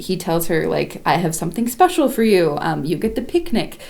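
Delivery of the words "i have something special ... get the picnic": ordinary delivery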